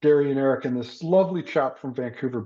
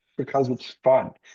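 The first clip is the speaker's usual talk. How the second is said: put-on heavy, laid-on, thick German accent. Retelling what a German guy told someone: thick German accent. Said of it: "in a thick German accent".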